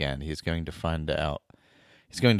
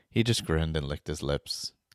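plain reading voice

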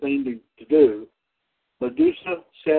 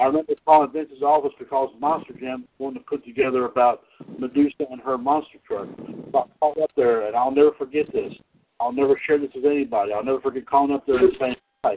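ordinary talk, nothing marked

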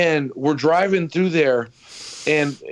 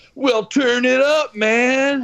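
groovy hippie guy voice, pitched up; 8 semitones higher than usual. Retelling an old commercial, acting out the hippie's reply, imitating a groovy hippie. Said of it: "this fucking groovy hippie guy".

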